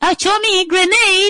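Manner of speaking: mock unmanly cry, high-pitched and loud.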